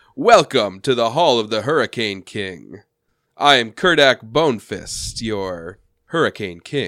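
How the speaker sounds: regal, ceremonious, formal delivery. Voicing a king who stands up and welcomes the party: Hurricane King voice. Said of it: "stands up and he says".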